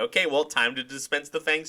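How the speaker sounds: gleeful, giddy, mocking sarcasm. Quoting the villain again: imitating Sonya giddy with mockery. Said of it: "giddy, um, with sarcasm and, and, and mockery".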